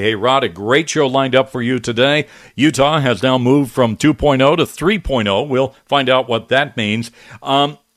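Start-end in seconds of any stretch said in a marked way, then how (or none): none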